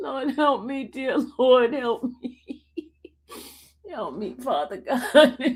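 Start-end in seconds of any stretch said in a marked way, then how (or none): 1.7-5.6 laughing helplessly, like crying with laughter. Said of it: "know why I'm laughing".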